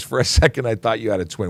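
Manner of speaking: ordinary talk, nothing marked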